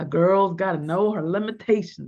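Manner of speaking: western tough-guy voice, like a film hard man. Speaker drops one line into their talk, in their best Clint Eastwood voice. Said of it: "I said that in my best Clint Eastwood voice".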